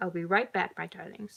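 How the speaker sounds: ordinary delivery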